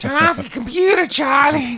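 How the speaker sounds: very high voice yelling as if from another room. Retelling a movie scene, imitating the mom yelling from the background. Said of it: "and the mom's in the background".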